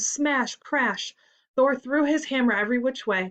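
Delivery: ordinary delivery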